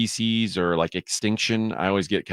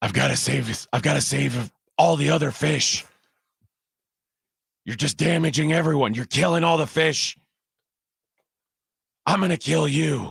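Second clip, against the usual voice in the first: ridiculous rough hero voice, pitched high; 6 semitones higher than usual. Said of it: "that's the one I like to do".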